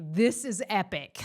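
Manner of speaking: acted out, words carried on laughter. Retelling someone's reaction in the ambulance: imitating someone laughing. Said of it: "I remember Josh just laughing, like".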